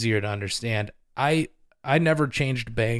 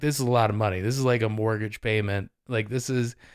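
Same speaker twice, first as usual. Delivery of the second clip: ordinary talk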